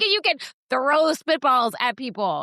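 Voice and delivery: put-on, high, fed-up, angry snapping outburst. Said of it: "You snapped".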